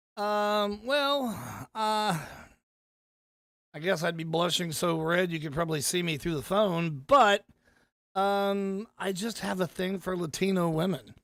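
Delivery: ordinary delivery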